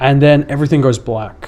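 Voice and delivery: ordinary talk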